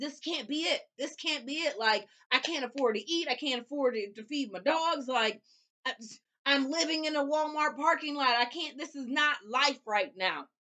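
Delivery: mock, high, mild crying out. The speaker recalls brakes that would not work, retelling yelling at God. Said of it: "I'm literally yelling at God".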